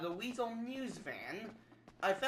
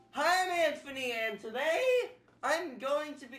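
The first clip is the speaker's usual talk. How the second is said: voice cracking and breaking into a high pitch; 6 semitones higher, 4 dB louder than usual. Starting a video introduction, then stopping: voice cracking. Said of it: "that voice crack".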